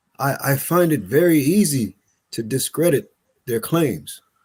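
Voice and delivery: ordinary delivery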